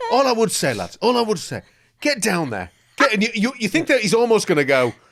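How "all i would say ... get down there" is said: irritated, angry, pissed-off tone. Retelling how a man talks about an event, imitating someone pissed off. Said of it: "sounds pissed off about it".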